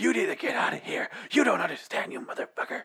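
fierce yell squeezed into a scream-whisper. Speaker acting out a store manager, imitating a scream-whisper. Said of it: "he scream whispers".

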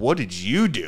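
slow, stunned, disbelieving, shocked voice. Retelling how a guy reacted when asked for niacin, acting out a shocked reaction. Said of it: "Like all like shocked".

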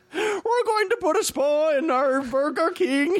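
odd put-on Irish accent, very high-pitched. Imagining a finnish executive pitching an idea in a meeting: weird irish accent. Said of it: "the weirdest Irish accent I've ever seen".

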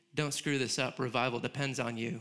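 normal talking voice

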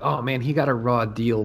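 normal talking voice

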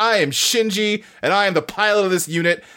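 play-acted firm, sharp, assertive snap. Retelling a scene where Shinji snaps back at his dad: imitating someone snapping back. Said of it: "snaps back at him".

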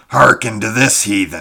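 very loud, booming, roaring bellow. Narrator voicing the Kothian, who laughs at the other's simplicity: bellowing. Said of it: "he bellowed".

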